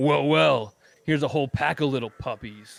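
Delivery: loud, snarling, menacing thug-like voice. Voicing a red-cloaked guard who snarls at the group: snarling thug. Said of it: "kinda snarls".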